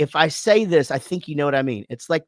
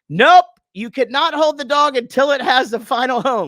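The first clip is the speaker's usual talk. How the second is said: put-on shrill, very high-pitched yelled call-out; 9 semitones higher, 4 dB louder than usual. Retelling how his wife yelled from across the room: imitating wife yelling. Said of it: "just yells out".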